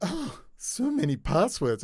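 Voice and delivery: put-on sweet, high, slow voice with midwestern accent. Retelling what an academic once said, Julianne impression. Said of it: "I do a good impersonation of".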